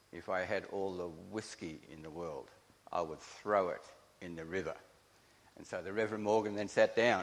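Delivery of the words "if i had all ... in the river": very serious, grave, solemn, hushed intoning. Retelling a reverend's closing words, imitating him: retelling a very serious intonation. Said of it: "he intoned in a very serious voice".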